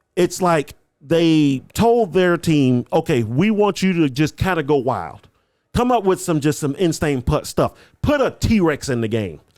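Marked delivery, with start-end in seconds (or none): none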